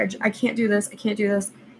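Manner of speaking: tearful crying with words catching and stumbling. Retelling crying while telling the staff before the procedure: imitating own crying plea. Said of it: "And I'm crying, and I'm telling them".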